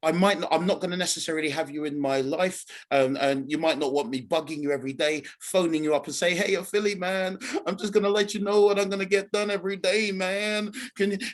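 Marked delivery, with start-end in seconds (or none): 6.3-11.2 put-on American accent, higher. Speaker acts out phoning someone every day to report, in an american accent. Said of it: "Why am I going into an American accent?".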